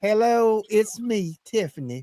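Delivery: put-on, slow Southern belle drawl. Suggesting the other person could play a Southern belle, demonstrating a Southern belle voice. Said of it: "I can see you playing a real Southern belle".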